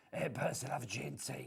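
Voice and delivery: put-on butch soap-opera character voice. Joking that a husky voice tonight sounds like a soap character: Phyllis Pierce voice. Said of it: "a character called Phyllis Pierce".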